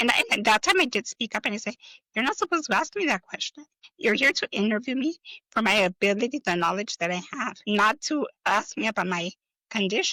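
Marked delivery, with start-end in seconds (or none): none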